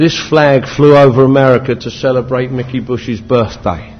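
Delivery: normal talking voice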